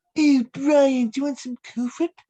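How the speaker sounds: put-on high cartoon baby voice. Opening an impression guessing game, one speaker does a Stewie Griffin voice. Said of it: "that was Stewie Griffin".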